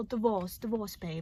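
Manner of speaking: put-on soft, unconvincing British accent. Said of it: "I can't really do the accent".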